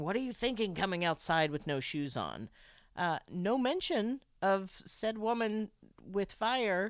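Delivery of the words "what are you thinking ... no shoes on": ordinary delivery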